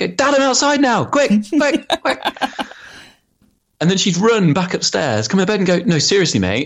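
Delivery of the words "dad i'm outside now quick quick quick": mock shout, pitched very high. Speaker retells her shouting to dad from outside, retelling her shouting. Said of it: "I'd hear her shouting from outside".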